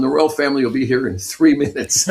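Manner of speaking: plain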